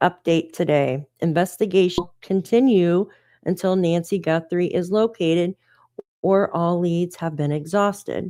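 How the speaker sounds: ordinary talk, nothing marked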